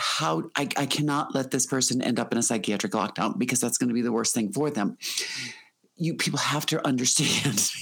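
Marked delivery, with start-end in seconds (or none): none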